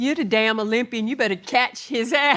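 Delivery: put-on yelling, sharp and snapped out. Retelling what was yelled from the boat during the swim: imitating someone yelling. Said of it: "they yell at me".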